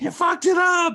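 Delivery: very high, shrill, loud scream. Describing yelling at young players on television, acting out the scream. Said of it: "I'm screaming at a television".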